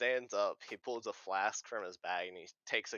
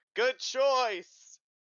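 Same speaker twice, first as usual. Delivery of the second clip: very high, very loud, shrill shouting; 10 dB louder than usual. Voicing a character's reply in a role-play scene, shouting. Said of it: "Lauren shouts".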